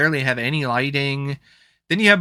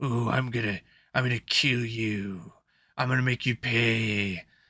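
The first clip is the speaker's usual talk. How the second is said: bad put-on creepy, menacing wrestling villain voice, hushed; 4 semitones lower, 7 dB quieter than usual. Mocking a wrestler character who tries to be intimidating, the speaker does a mock-creepy bad wrestler threat. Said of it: "bad like W C W T N A wrestler character who's trying".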